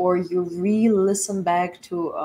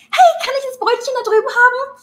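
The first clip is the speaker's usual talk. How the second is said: put-on sugary sweet voice, very high, very loud; 8 dB louder than usual. Recalling asking for a bread roll in German with friends; really high-pitched voice. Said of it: "I stepped into this really high pitched voice".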